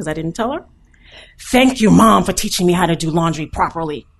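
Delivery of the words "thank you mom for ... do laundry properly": put-on theatrical, dramatic teen voice, raised. Retelling a daughter's phone call from college: imitating Shas's dramatic teen voice. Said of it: "in that kind of dramatic teenage voice".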